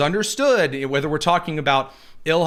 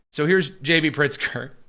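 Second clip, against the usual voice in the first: normal talking voice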